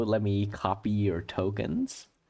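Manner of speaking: ordinary talk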